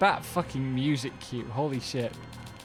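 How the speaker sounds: ordinary delivery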